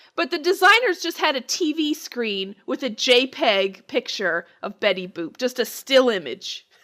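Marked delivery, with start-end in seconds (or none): none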